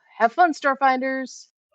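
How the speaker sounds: quick, high, tossed-off called-out shout. A narrator voices Lial calling to the Starfinders as she ushers her team on, quick shout. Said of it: "As Lial shouts out quickly".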